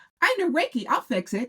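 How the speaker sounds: very high, tiny little raccoon critter voice. At a four-day show, the speaker retells someone offering Reiki, imitating the dancing raccoon. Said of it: "the little dancing raccoon comes up and says".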